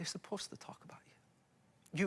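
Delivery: hushed, soft, breathy whisper.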